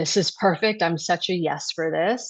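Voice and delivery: ordinary talk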